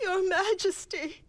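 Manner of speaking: high-pitched, tearful sobbing through the words. Calling out to the ruler in distress: crying. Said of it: "Why are you crying?".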